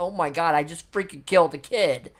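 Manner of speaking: plain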